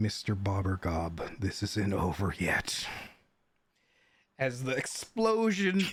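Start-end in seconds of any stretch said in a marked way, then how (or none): 0.0-2.9 low, inward murmur under the breath. A game master voices a villain as the explosion takes him, murmuring to himself. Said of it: "he just murmurs to himself".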